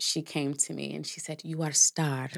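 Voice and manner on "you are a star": clumsy, really bad put-on Sudanese accent. Speaker quotes what the groom's mother said to them, really bad Sudanese accent. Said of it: "that's my really bad Sudanese accent".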